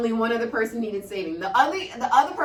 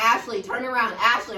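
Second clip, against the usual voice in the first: plain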